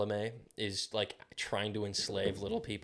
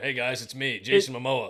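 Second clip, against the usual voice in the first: very loud, casual, big shout; 3 semitones higher, 8 dB louder than usual. Mocking an actor who always plays himself: Jason Momoa impression. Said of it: "He's just playing himself".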